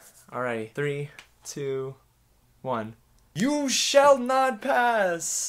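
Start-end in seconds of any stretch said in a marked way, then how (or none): 3.4-5.5 dramatic, acted, theatrical shout. Trying out a famous movie line as a warm-up: dramatic shouted movie line. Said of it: "I gotta get it from the diaphragm".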